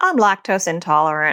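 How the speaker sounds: mock dry, matter-of-fact deadpan comic voice. Parent retelling her child's running joke, imitating the deadpan funny voice. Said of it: "she says it like deadpan in such a funny voice".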